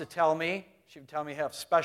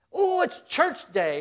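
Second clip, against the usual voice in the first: put-on very high, slow, excited little-kid chirping voice; 11 semitones higher than usual. A parent recalls their children's excitement about church day, chirpy little kid voice. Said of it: "the little voices chirping that".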